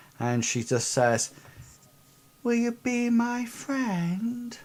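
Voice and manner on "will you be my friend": put-on very high, raspy little girl's voice. Narrator voicing a little girl in the story: childish voice with a rasp. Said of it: "it's a childish voice, but it has a, a little bit of a rasp to it".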